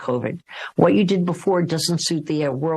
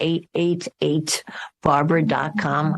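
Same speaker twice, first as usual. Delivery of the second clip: slow, deliberate, drawn out, word by word. Giving the web address where people can tune in: said slowly. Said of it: "let me say it slow".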